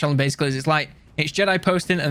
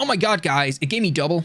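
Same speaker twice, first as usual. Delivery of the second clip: full put-on American accent; 2 semitones higher than usual. Speaker playing a game redoes a generic YouTuber reaction in a put-on American accent. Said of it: "I don't know why I have to go American with it".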